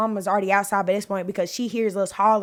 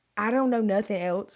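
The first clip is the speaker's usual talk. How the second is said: plain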